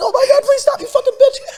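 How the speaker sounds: put-on half crying. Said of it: "He'd be, like, half crying".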